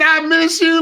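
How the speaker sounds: mock crying, tearful voice while speaking. Retelling the little post she put out, imitating someone crying. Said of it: "but she was crying like".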